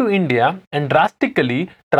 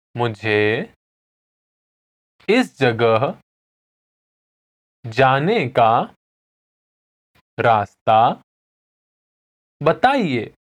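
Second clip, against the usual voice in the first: very slow Hindi, broken into small halting pieces; 5 semitones lower than usual. Podcast host repeating a Hindi phrase for listeners to repeat, saying it again slowly. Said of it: "Now I'm going to say it again slowly".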